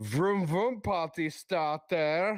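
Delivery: put-on German accent. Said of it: "he was doing it in a German accent".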